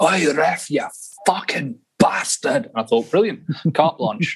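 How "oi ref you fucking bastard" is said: broad Glaswegian brogue, called out. Speaker quotes his dad reacting to a referee's call, in a broad Glaswegian brogue. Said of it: "in the big Glaswegian brogue".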